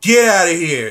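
loud yelling voice. Retelling how grandma opened the window at the owl: imitating grandma yelling.

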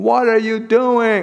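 very high, mild, reined-in yell. Retelling yelling at children when the ball rolls into the street: retelling own angry yell. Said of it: "I will yell at the top of my lungs".

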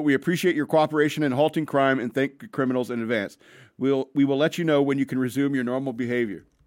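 plain

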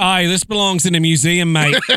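adventurer voice with Australian accent. Joking about an object kept in a Perth museum, Australian Indiana Jones voice. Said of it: "like the Australian Indiana Jones".

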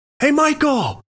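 very high, called-out yell. Speaker retells a friend yelling after a man walking away: retelling a yell. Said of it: "he yells at him".

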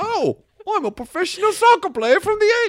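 very high, very loud put-on New York accent. Imagining a man time-traveled from 1984 introducing himself, the speaker does a new york accent. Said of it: "That's my New York accent".

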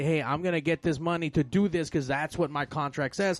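ordinary talk, nothing marked

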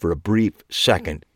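ordinary delivery, nothing marked

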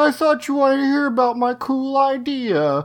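very high fake weeping, drawn out. Retelling a scene where a character is being yelled at: imitating fake crying. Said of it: "he does some fake crying here".

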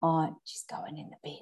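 hushed whisper. Deciding a houseplant goes in the bin, whispering so the plant won't hear. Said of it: "I'm whispering because she's".

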